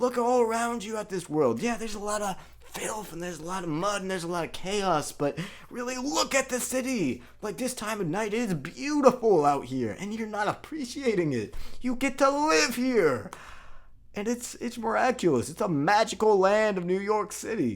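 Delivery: high, wide-eyed, goofy, rapturous gushing voice. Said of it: "He's like".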